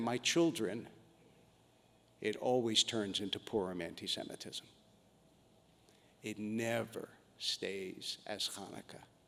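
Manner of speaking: put-on patronizing, talking-down older person's voice. Saying what they wanted to tell the people in the encampments: put-on condescending elder's tone. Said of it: "in that condescending tone that older people sometimes take".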